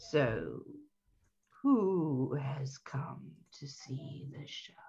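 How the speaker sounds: very deep, gravelly, soft raspy voice. Retelling how a man came over and spoke: very deep, gravelly voice. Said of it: "in a very deep, gravelly voice says".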